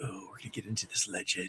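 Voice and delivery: moody, very soft, breathy hushed whisper. Recalling how an earlier intro was recorded: imitating own past whisper. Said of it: "a whispery".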